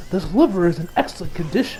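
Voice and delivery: ordinary talk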